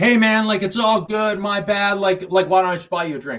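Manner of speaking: loud, high, relaxed tone. Advising how to defuse a confrontation, showing the apology in a raised voice. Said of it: "And you raise your voice".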